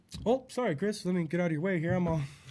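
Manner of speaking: very deep, low, hushed, barely audible voice. Retelling how Tom excused himself: imitating Tom. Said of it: "he'd be like".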